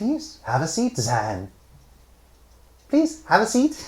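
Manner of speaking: put-on very high, crackling, swooping old crone voice. Narrator voicing the crone as she invites the visitor to sit, crone voice. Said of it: "Her laughter bursts like mad lightning from withered lips".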